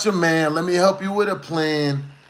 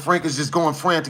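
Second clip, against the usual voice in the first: plain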